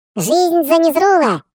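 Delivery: high squeaky put-on falsetto goblin voice. Narrator reading a goblin's exclamation in a story, squeaky goblin falsetto. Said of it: "Гоблин пропищал мне таким фальцетом".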